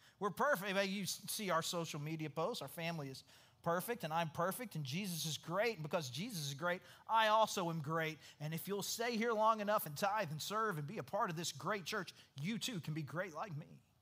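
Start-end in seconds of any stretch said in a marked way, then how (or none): none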